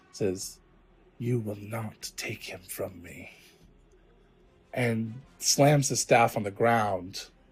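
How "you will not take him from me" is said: very soft, very quiet growling whisper. A figure with a staff speaks to the listener, in a whisper growl. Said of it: "just kind of a whisper growl".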